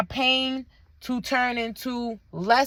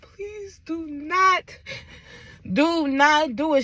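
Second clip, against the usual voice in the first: acted crying, very slow, drawn-out, tearful voice; 4 semitones higher than usual. Retelling crying to a girl at Walmart: retelling a tearful plea. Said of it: "I'm crying to this girl in the Walmart".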